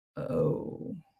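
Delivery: breathy, whispered, disappointed "oh". Showing how a lettered interjection sounds: bad-news "oh". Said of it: "Bad news".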